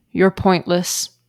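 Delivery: mock deadpan, flat, straight-faced, no inflection. Retelling how she delivered a joke's punchline, retelling a flat deadpan line. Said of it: "straight faced, no inflection to her tone at all".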